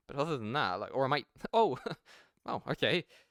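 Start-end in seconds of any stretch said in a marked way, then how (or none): 1.6-3.1 mock puzzled tone, nearly laughing, confused. Replaying own reaction to an objection about their tone, acting confused, almost laughing. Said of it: "like confused, and I'm almost laughing at his objection".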